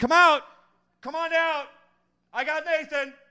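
shrill, very high-pitched yelling. Retelling how the brother called everyone out: imitating brother yelling. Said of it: "my brother starts yelling".

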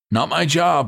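very high-pitched, sharp, curt snap. A paramedic answers a nurse's order, snapping. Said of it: "the paramedic snapped".

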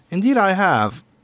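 high, crisp, official-sounding woman's voice.

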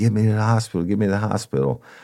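put-on screaming and crying. Retelling an injured man begging to go to hospital, retelling his screaming. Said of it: "he's screaming, he's crying".

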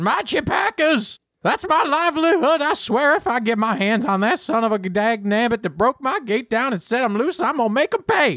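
very high, loud, put-on dwarf voice. Voicing a dwarf who comes running up about his chipacas: dwarf voice. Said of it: "a dwarf with a very, like, messy beard comes running up and says".

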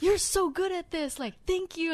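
acted, high-pitched, thrilled, gushing excited yell. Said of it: "he got so excited".

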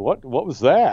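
normal talking voice

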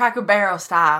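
speaking in a Southern American accent. Repeating a phrase on request, saying it in a Southern accent. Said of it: "Don't know why I did Southern".

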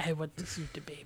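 put-on old Russian man accent. Joking that every mention of a baby sets off a put-on old Russian man accent. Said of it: "I guess I'm some old Russian guy now".

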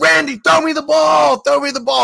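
mock, raw, very high, rough hollering. Retelling calling to pitcher randy for the ball, retelling screaming at a pitcher. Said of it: "I was just screaming at him like".

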